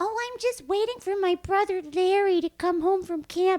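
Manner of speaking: very high, loud cat voice. Retelling a video where mom voices the cat: imitating mom's put-on cat voice. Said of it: "she just has the cat go".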